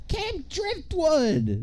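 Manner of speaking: acted very high, shrill, swooping shout of excitement. Retelling a film scene where Charlie yells out where they're going, retelling an excited yell. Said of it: "And then he just yells".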